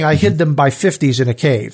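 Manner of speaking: ordinary delivery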